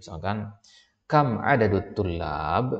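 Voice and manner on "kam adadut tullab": rising question intonation on kam adadut tullab, especially kam. Arabic grammar lesson, example of asking: question intonation on kam adadut tullab. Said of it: "ini kalimat tanya karena ketahuan dari nadanya".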